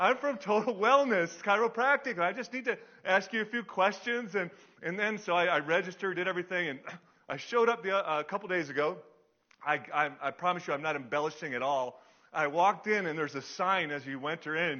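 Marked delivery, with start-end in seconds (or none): 0.0-4.3 high, loud bubbly voice. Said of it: "this woman is the most bubbly".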